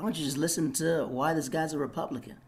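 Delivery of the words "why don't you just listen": plain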